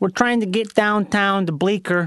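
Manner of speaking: put-on Chicago accent. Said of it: "There you go".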